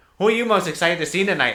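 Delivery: eager, high, loud put-on nerdy voice. Retelling what a guy asked him during a silence among friends, in a nerdy voice. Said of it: "had like that nerdy voice".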